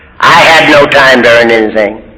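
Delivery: normal talking voice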